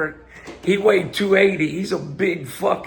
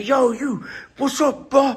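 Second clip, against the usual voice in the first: play-acted high, confrontational screaming; 6 semitones higher than usual. Acting out a rude challenger arriving at the gym: imitating someone screaming. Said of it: "screaming to".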